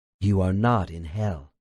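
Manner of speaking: soft, quiet, gentle, calming voice. Reading the doctor reassuring a terrified subject: softly.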